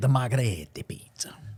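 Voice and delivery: musical, whispered Italian accent.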